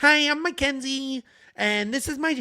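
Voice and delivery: put-on high, slow, drawn-out Californian valley girl accent. Imitating a girl introducing herself on camera: Mackenzie valley girl accent.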